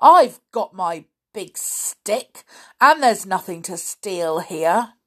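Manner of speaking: loud, scornful, contemptuous, dismissive. The old caretaker answers Peter, scornfully. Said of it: "said the old fellow scornfully".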